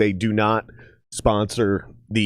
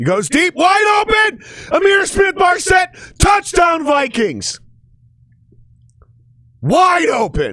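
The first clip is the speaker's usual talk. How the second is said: very high, louder, booming, thrilled excited yell; 6 dB louder than usual. Watching the Vikings game as a touchdown is scored, excited yelling. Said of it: "I didn't mean to yell at you guys".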